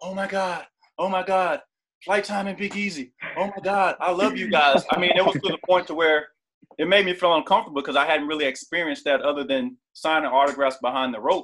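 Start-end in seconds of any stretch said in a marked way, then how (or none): 0.0-4.8 put-on frantic, star-struck, drawn-out panicked outburst. Retelling a young lady who came up to them in the airport, imitating her frantic panic. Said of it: "she came up to us like in a frantic panic".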